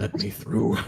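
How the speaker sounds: whispered, pleading tone. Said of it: "I'm just gonna whisper".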